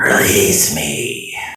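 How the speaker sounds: very low, eerie, creepy whisper. Narrating a cornered figure begging another character, very creepy whisper. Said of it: "he whispers in a very creepy voice".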